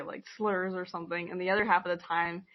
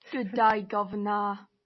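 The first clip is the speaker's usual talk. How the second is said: fake, badly done British accent; 2 semitones higher, 4 dB louder than usual. Joking about british spelling and the redcoats, bad british accent. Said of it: "That's my British accent".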